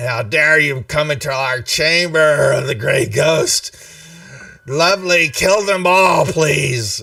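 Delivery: rasping, scraping voice. Game master voicing a woman flinging obscenities at the party, raspy voice. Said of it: "in this raspy voice".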